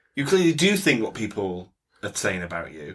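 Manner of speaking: usual speaking voice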